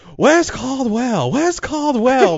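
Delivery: mocking, sneering repetition with a mock accent. Like a crooked, arrogant boss sneering at a visitor, repeating his pronunciation back to him in a mocking, drawn-out way. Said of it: "enunciates it very fiercely".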